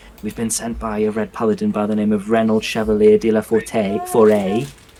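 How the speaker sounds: quiet, almost whispered tone. Speaking as Docker, explaining who sent the group: Docker's low near-whisper. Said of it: "in a very low tone, almost like a whisper".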